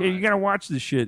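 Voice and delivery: high-pitched dog puppet voice. Retelling his video where a dog puppet watches along: Rolf the dog voice. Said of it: "I have Rolf the dog watching, and he's like".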